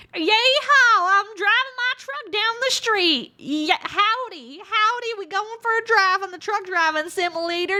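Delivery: bad put-on Southern accent. Playing a truck driving simulator, in a really shitty southern accent. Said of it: "I do a really, really shitty southern accent".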